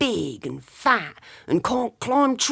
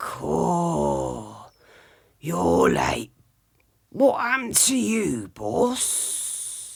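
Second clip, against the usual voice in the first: low, gruff, rough, husky voice; 4 semitones lower, 3 dB quieter than usual. Narrator reads a character greeting his late boss: rough, husky voice. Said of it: "Asked One Fang with a rough, husky voice".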